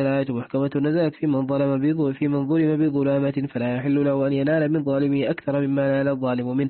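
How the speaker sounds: normal talking voice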